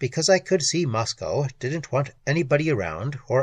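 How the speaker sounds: plain reading voice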